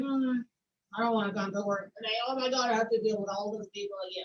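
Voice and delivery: put-on glum tone. Explaining the question by acting out someone who dreads coming to work, mock downcast. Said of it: "When you're down or when you're like".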